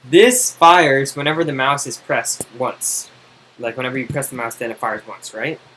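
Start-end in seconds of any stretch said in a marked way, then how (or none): 0.1-3.1 slow, loud, deliberate, slowed-down delivery. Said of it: "'cause you say it really fast".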